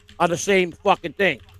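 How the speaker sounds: ordinary talk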